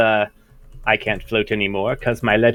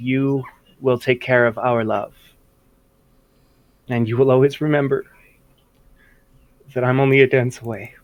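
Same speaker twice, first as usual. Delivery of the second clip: full-on crying while speaking. Acting out a scene, placing the baby in the other's hands, full-on crying. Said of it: "I start full on crying now".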